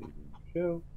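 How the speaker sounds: funny, high, wide squawking noises.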